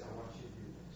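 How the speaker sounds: low, soft, gentle whisper.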